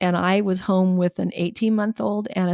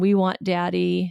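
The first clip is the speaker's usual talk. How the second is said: imitated crying kids, slower. Speaker tells the listener how the kids cried for their father, imitating crying kids. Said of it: "and they're crying, saying".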